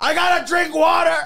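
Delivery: very loud, high-pitched yell at top of lungs. Joking about a movie character, imitating George Lopez yelling. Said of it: "however George Lopez talks when he yells".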